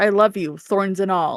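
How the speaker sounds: put-on whisper. Retelling a book scene where he says it as she falls asleep: imitating a whisper. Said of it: "He whispers to her".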